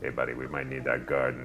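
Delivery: soft, half-whispered aside. Playing a character who half-whispers to the custodian: half-whispering to the custodian. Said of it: "whispering to the custodian to be like".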